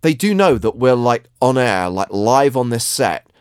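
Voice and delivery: ordinary delivery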